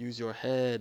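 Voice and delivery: simple, broken English delivery. Retelling what a guard with a shotgun said: imitating broken English. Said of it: "the guy said in broken English".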